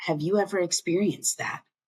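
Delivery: soft, slow, hushed and unhurried voice. A speaker shows how they ask someone about childhood trauma, in a soft, slow voice. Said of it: "I ask it in that soft, slow voice".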